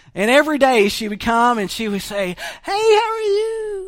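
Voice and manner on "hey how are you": put-on very high, slow five-year-old girl voice. Speaker tells a story, voicing a little girl greeting an old man: 5-year-old girl voice. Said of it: "That's my best 5-year-old girl voice".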